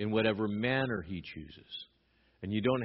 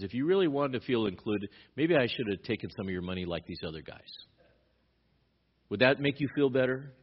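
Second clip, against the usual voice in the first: acted, tongue-in-cheek, sarcastic, needling tone. Acting out what Paul says to the church: retelling a sarcastic remark. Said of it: "So sarcastically".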